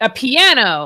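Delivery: big, loud, booming voice. Answering the riddle in character: really loud booming voice. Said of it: "make his voice really loud and booming and say".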